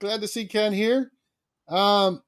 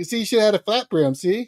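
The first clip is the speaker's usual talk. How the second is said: usual speaking voice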